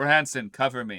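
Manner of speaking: commanding, absolute authority in every word. Ordering a companion to give cover: commanding, full of authority. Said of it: "With absolute authority".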